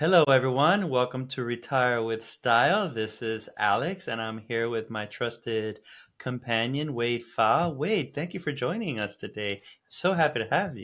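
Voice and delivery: calm public-radio host voice. Opening the episode and welcoming a guest: Terry Gross NPR voice. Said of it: "Is that your Terry Gross from N P R impersonation?".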